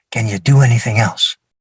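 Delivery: very low, hushed stage whisper. Retelling a question someone half-whispered after a demonstration: imitating a half-whisper. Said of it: "he whispers".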